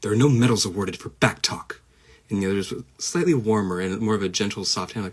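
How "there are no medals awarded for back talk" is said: severe, stern, very harsh, strict raised voice. Demonstrating one of two voices tried for a line, very harsh and strict. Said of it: "So one was very harsh".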